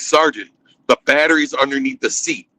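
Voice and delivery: normal talking voice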